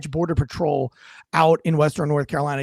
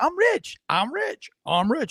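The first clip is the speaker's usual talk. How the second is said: put-on man yelling, higher; 9 semitones higher than usual. Retelling a drugged man yelling at an officer: imitating a man yelling. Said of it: "he keeps yelling".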